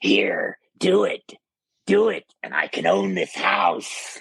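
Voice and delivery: put-on menacing, demonic possessed voice. Retelling what she said with her eyes wide open: put-on demonic voice. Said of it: "In a demonic voice with her eyes wide open, just like this".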